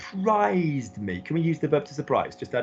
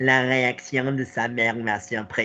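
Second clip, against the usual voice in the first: slow, nerdy, nasal geeky twang; 3 semitones lower than usual. Showing a learner a voice entirely on one twang: geeky twangy voice. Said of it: "that kind of geeky kind of voice".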